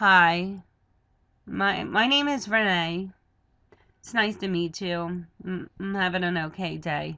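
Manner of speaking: low, lackluster, half-hearted unenthusiastic delivery. Demonstrating a greeting without enthusiasm, for contrast; unenthusiastic tone. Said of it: "Or you can walk over to somebody".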